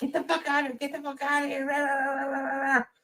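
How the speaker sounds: shrill, very high-pitched shrieking screams. Retelling how a man's girlfriend or wife yelled at him: imitating a woman screaming.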